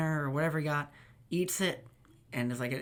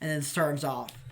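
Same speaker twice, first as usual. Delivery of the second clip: plain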